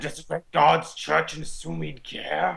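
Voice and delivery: put-on creaky, rough, fire-and-brimstone sinister zealot voice. Doing another speaker's character voice on request: low put-on church villain voice. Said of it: "That's very good".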